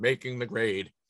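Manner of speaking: deep on-air radio announcer voice. Announcing the segment name, dropping a couple octaves: deep radio voice. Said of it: "See how I dropped down there on a couple octaves? I got nice. My radio voice".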